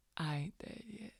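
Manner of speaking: faint, weak, barely-there whisper. Voicing a wounded character answering him: weak whisper in character. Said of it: "smiles weakly and just whispers out to him".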